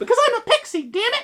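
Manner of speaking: very high, loud, cartoonish pixie squeak. Demonstrating a character voice pitched above the speaker's normal voice, high-pitched pixie voice. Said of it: "that sort of voice could be entirely appropriate".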